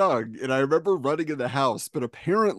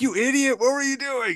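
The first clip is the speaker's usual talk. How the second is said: very high-pitched, shrill, furious angry yelling; 11 semitones higher than usual. Retelling being knocked over with a bike and yelled at: imitating someone yelling. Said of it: "he yelled at me".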